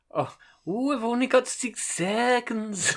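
mock Welsh accent, elongated vowels. Joking about Welsh speech, stretching the vowels: mock Welsh accent, elongated vowels. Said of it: "I was just elongating shit".

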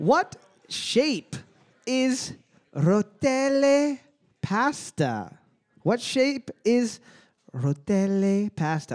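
joking, put-on Italian accent. Reading a trivia question aloud in a joking italian accent. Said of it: "my incredible, perfect Italian accent".

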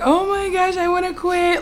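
very high, weepy, drawn-out crying voice. Recalling early runs with a sister, acting out past self crying. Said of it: "And I'd be crying like".

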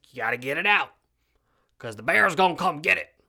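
rough, scratchy woman's rasp, loud and high. Retelling what a woman told the speaker, imitating her raspy voice. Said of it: "she's got this real raspy voice like this".

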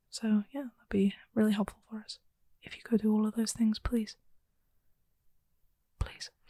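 quiet, breathy, hushed stage whisper. Podcast host asking listeners for ratings and a review, whispering. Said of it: "Stop whispering".

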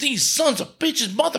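put-on cursing outburst. Retelling a movie scene where a woman hears about a stolen pig: imitating angry cursing. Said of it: "she starts just cursing".

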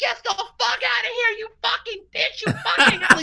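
high-pitched screaming with swearing. Retelling how a guy screamed at the speaker, imitating a guy screaming. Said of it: "this guy is screaming".

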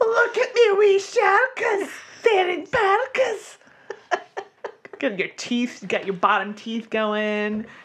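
exaggerated Scottish accent, high, big and swooping. Speaker shows off his go-to Scottish accent, over-the-top Flintheart Glomgold Scottish accent. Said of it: "my Scottish accent. It's now just Flintheart Glomgold".

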